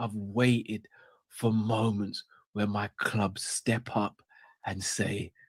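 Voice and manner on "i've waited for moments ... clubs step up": hushed, slow, excited whisper. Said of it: "he's got a whisper".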